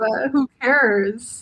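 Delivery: mocking, dismissive voice.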